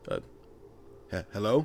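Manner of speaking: startled, taken-aback, breathy, faltering whisper. Voicing a startled creature as a player approaches: startled, taken aback. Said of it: "he's kinda startled and, like, taken aback".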